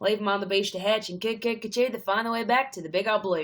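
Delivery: over-the-top, exaggerated fake Australian accent. Demonstrating an accent nobody in Australia would use, exaggerated Australian accent. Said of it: "an Australian accent ... really exaggerated accent".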